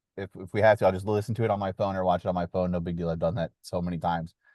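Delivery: ordinary delivery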